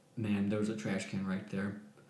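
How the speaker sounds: acted, dead-level deadpan monotone, zero inflection. Retelling answering a woman yelling in their face, retelling in a flat monotone. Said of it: "as monotone as I can be".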